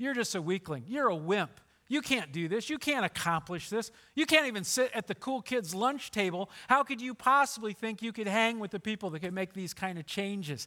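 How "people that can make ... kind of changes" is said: ordinary talk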